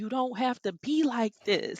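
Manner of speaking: high, loud pleading voice.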